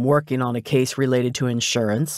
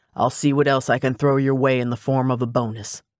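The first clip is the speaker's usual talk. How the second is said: ordinary delivery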